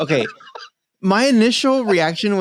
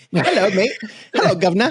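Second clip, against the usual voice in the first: higher, laughing, cheesy mock English accent. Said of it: "I don't know where the accent came from".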